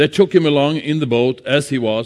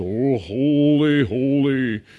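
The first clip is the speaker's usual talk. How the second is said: over-the-top pious, saintly voice, drawn out; 4 dB quieter than usual. Speaker telling listeners that talking to Jesus needs no special tone, mock spiritual voice. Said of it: "some kind of spiritual voice".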